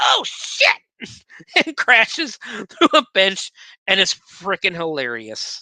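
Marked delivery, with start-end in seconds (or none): 0.0-0.7 excited, exclaiming cartoon duck voice. Retelling how the duck goes flying off the swerving car, in the Donald Duck voice. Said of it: "in the Donald Duck voice goes".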